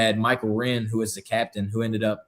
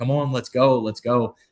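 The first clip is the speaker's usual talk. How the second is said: mock frantic, urgent yelling shout; 3 dB louder than usual. Retelling how people at the bridge urged him on: imitating people screaming. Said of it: "they're screaming like".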